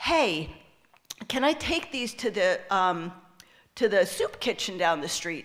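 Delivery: normal talking voice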